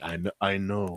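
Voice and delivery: put-on French Canadian accent. Retelling a friend's reply on a stream: Frederick's French Canadian accent. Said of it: "with his accent".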